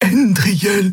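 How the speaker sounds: frightened whisper. Xia calls Andriel's name while armed figures close in; fearful whisper. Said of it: "flüsterte Xia ängstlich".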